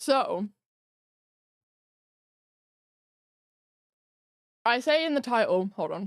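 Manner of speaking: talking with mouth full of food. Eating food you ordered in while talking to viewers, speaking with mouth full. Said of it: "it's rude to speak with your mouth full".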